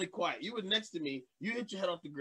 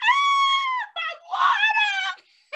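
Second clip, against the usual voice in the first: put-on very high, very loud, shrill childish whine; 10 dB louder than usual. Retelling how a child reacts to dropping his water: imitating a child whining. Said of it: "he whines if he drops his water".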